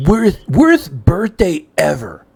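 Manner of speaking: swooping, sing-song, wide pitch swing on every word. Comparing the mood to Comic Book Guy from The Simpsons: Comic Book Guy voice. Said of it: "comic book guy".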